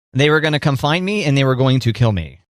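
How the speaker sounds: ordinary talk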